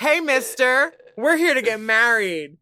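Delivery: put-on very high, very loud, shrill sketchy teenager voice. Commenting on a couple on the runway, imitating drug-seeking teenagers at a mall. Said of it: "look like drug seeking teenagers at a mall. Just like".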